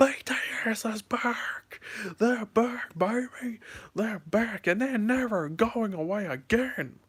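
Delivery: put-on yelling at top of lungs, high, drawn-out. Retelling shouting home alone about the band's comeback: imitating own shout at top of lungs. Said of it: "I shouted at the top of my lungs".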